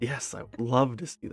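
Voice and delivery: very excited. Answering as the woman when Demira offers to show her the weaponsmith, very excited. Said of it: "she's very excited".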